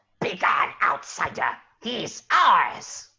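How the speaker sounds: slow, crackling little flame-creature voice. Telling a game scene where a creature waddles up to you: fire creature voice. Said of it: "waddle up to you and just go".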